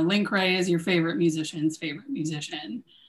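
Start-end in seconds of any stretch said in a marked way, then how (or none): none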